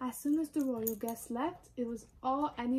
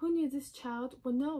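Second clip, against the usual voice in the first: usual speaking voice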